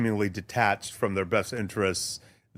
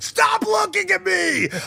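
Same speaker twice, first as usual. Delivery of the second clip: mock screaming, higher and louder; 7 dB louder than usual. Retelling a crowded steakhouse outburst by Steve Kerr: imitating Steve Kerr screaming. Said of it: "started screaming".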